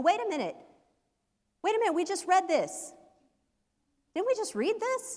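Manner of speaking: put-on very high, squeaky little kid voice. Retelling a junior high student interrupting Bible study: imitating Lee's squeaky voice. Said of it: "squeaky voiced junior high pipsqueak".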